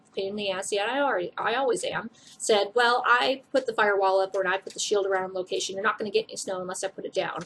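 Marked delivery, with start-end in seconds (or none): none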